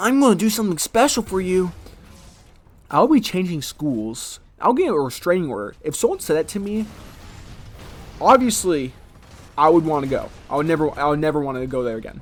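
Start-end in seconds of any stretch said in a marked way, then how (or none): 0.0-1.7 creepy, high, put-on anime character voice. Retelling what a Twilight extra said to a middle school girl: imitating a creepy anime voice. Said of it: "creepily talking to an anime voice, then says".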